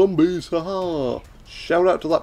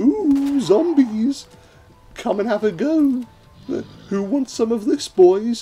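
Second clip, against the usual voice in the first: high, slow, drawn-out, fluttery, flirty lady voice; 8 semitones higher than usual. Teasing a fellow player for offering themselves up to the zombies, Bugs Bunny dressed as a woman. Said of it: "your great Bugs Bunny impression where he dresses up as a woman".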